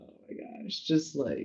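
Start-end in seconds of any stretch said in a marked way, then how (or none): 0.0-0.8 whispered, breathy laughing under the breath. Retelling laughing hard alone on the floor: imitating own laughing. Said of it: "dying laughing".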